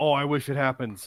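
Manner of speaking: mock ironic excited voice. Imitating fans who ironically hoped for a win: imitating fans' ironic excitement. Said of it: "They didn't legitimately want him to win".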